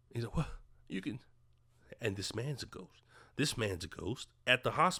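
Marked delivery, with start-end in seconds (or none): 0.3-1.2 shocked, stunned, breathy whisper. Retelling a film scene, a ghost is suddenly seen: acting out shock. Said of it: "he's shocked".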